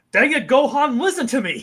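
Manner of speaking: put-on loud, high-pitched hard yelling. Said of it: "he's yelling at Gohan".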